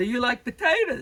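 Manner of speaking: put-on nervous New York accent. Retelling how a nervous man finally spoke to her, in his New York accent. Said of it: "in his New York accent".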